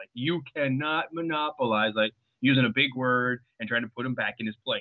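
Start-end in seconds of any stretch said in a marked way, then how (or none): 0.1-1.9 slow, condescending schoolteacher tone. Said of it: "come across as a little condescending".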